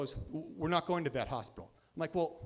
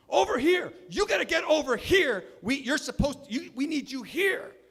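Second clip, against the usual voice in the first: very loud, very high-pitched screaming; 10 semitones higher, 9 dB louder than usual. Retelling how a paramedic screamed at an arriving ambulance: imitating someone screaming. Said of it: "starts screaming at the ambulance".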